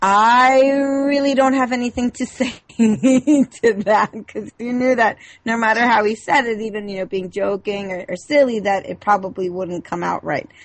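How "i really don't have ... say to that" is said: laughing, high and slow. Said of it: "He's like".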